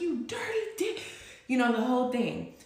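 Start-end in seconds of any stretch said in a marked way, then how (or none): 0.0-1.0 very high, furious screaming yell. Retelling throwing a toy at him: retelling a scream. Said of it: "I was screaming".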